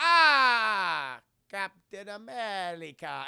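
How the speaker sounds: put-on loud, swooping, thick Italian accent, stretched "ah". Retelling a movie scene where Red Skull greets Captain America: over-exaggerated Italian accent as Red Skull. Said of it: "he has a super over-exaggerated Italian accent".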